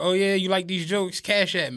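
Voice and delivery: acted playful, joking tone of voice. Retelling his own reply to a woman who praised his Instagram, joking. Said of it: "And jokingly".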